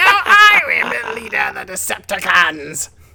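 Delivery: shrill, high, very loud, shouted character voice. Answering a request to do Starscream, trying the Starscream voice. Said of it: "I don't remember how Starscream sounded".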